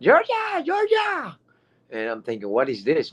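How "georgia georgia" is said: mock screaming, pitched very high. Retelling how a lady ran up to their parked car, imitating a woman screaming. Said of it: "this lady runs screaming".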